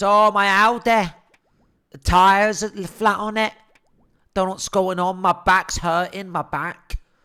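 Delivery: put-on Mancunian accent with words stretched out. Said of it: "she's got that disgusting Mancunian accent".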